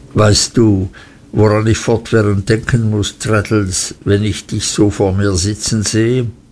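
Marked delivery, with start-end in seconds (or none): none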